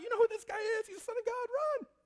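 shrill, very high, loud demon cry. Retelling how demons reacted when Jesus came, acting out demons crying out. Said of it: "And they'd cry out".

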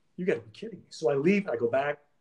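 normal talking voice

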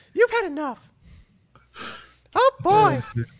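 put-on cartoon mouse voice. Joining a joke about security shutting a party down: Mickey Mouse voice. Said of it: "Not a bad Mickey".

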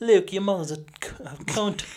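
put-on British accent, high, slow and deliberate. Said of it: "a British accent".

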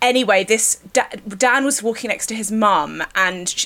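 ordinary delivery

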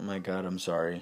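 plain

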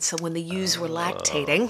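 ordinary delivery

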